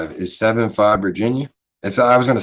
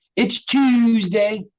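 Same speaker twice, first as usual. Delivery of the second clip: put-on Baltimore accent, pitched very high. Showing how people from Baltimore say Tuesday: imitating a Baltimore accent. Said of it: "That's that Baltimore accent for sure".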